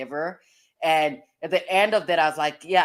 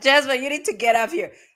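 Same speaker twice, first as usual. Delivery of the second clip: laughing, pitched up, words broken by laughter; 9 semitones higher, 4 dB louder than usual. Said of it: "The reason why I'm laughing".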